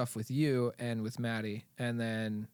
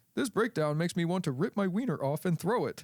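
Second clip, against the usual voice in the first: high synthetic computer text-to-speech voice; 6 semitones higher, 4 dB louder than usual. Quoting what the ai voice said before a breakdown: ai text-to-speech voice. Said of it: "the A I voice".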